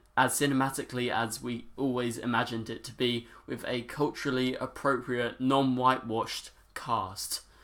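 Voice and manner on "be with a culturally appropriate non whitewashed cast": ordinary talk, nothing marked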